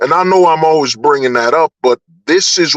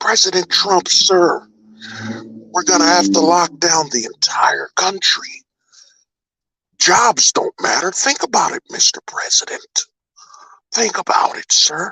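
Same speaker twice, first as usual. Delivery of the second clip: put-on evil voice, quieter; 3 semitones higher, 4 dB quieter than usual. Playing someone addressing the president as sir, in a put-on evil voice. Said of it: "let me put my evil voice".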